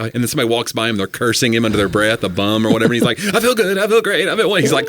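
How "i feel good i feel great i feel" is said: put-on panicked voice, higher. Retelling a movie scene where a character repeats affirmations, imitating panicked Bob. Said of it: "panicking as he says it".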